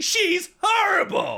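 very high, forceful delivery flung out. Retelling a friend's strong reaction to a clip: Jeff from Curb Your Enthusiasm voice. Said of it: "sounded a bit like, uh, Jeff from Curb Your Enthusiasm".

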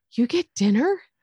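plaintive, begging, orphan-style pleading. Retelling how a line was delivered: imitating Carter's pleading delivery. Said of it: "Carter does such a good job of delivering".

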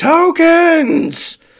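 put-on very high, very loud, shrill drunken shout. Voicing a swaying, intoxicated humanoid that points and yells: yelling drunkenly. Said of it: "points a finger, and yells".

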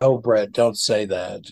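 plain

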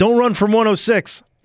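loud, high-pitched scream. Retelling how a friend shouted while chasing: imitating someone screaming. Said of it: "he's screaming".

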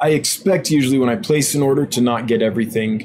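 ordinary talk, nothing marked

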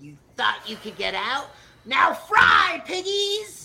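shrill, high, loud, swooping horror-villain screech. Imagining Chucky appearing midway through the house, in a Crypt Keeper voice. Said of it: "I don't know why I sound like the Crypt Keeper now".

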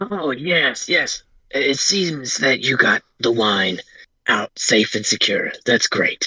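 put-on creepy old man character voice. Game master voicing the old man greeting the players, Old Man Jenkins voice. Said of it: "the old man kind of creeps out. / the old man kind of creeps out. Hello? He's waving at you guys again. He doesn't think you all see him. Creepy old man. / the old man kind of creeps out. / the old ma".

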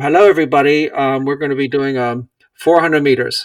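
public address announcement style. Retelling a race where a PA announcement changes the distance: imitating a PA announcement. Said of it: "a big P A announcement".

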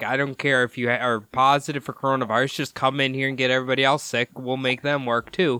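usual speaking voice

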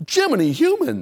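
high, wide, amazed exclaiming voice.

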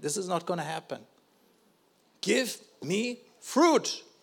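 earnest, insistent, begging, pleading tone. Retelling a past prayer to the Lord: retelling own pleading prayer. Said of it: "pleading and saying".

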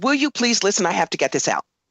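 normal talking voice

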